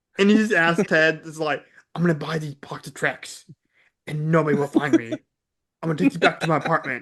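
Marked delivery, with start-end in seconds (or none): 2.0-7.1 put-on serious voice. Retelling a Liam Neeson scene buying Trix: Liam Neeson impression. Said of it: "my favorite Liam Neeson thing ever is Ted Two".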